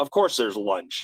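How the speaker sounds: put-on flat, deadpan delivery. Retelling a director's flat joke to the cast: imitating a deadpan flat delivery. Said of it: "he says everything very flat".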